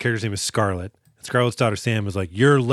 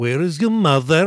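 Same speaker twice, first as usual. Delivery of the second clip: very bad fake Russian accent, higher; 4 semitones higher than usual. Retelling a scene where a bad guy sits opposite Sam, very bad Russian accent. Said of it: "doing a very bad Russian accent".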